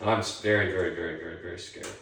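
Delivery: ordinary talk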